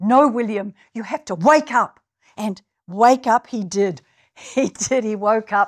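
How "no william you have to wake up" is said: put-on weak, poorly managed Scottish accent. Retelling a woman's words to William in a dream, bad Scottish accent. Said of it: "I can't do a Scottish accent very well".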